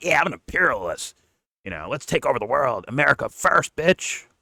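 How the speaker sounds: high-pitched, screaming troll voice. Explaining imperialism, speaker does Nick Fuentes' screaming trolling voice. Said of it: "the trolling voice of Nick Fuentes when he screams".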